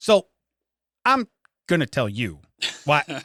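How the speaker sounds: stop-start, faltering, halting, hesitant phrasing. Complaining about a podcaster he can't stand, imitating Lawrence Jackson's hesitation. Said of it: "how he hesitates when he talks".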